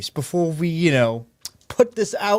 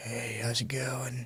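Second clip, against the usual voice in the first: hushed, slow, low, drawn-out brooding murmur, try-hard cool; 4 semitones lower, 13 dB quieter than usual. Demonstrating how trying to sound cool goes wrong, slow brooding voice. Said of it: "that slow like brooding like".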